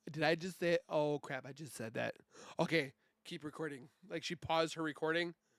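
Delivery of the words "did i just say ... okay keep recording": ordinary delivery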